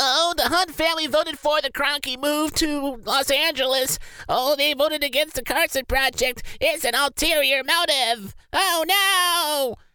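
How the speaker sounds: very high, squeaky, whiny mock voice. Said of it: "I would have been that guy with that squeaky voice".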